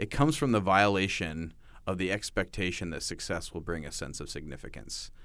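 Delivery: ordinary delivery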